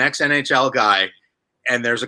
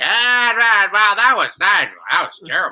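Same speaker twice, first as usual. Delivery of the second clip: put-on drunk broadcaster voice, higher pitched; 7 semitones higher than usual. Imitating a broadcaster calling a game from the stands: drunk Harry Caray impression. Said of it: "He's twenty-seven beers deep, and he's like".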